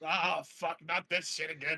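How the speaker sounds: fed-up, extremely irritated, annoyed swearing. A character reacts to hearing a booming neigh again, irritated. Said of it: "looks extremely irritated".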